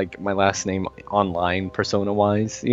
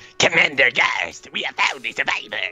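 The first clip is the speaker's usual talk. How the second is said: high, put-on alien soldier voice; 5 semitones higher than usual. Showing the voice once used for elite characters: elite voice. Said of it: "my elite voices were like".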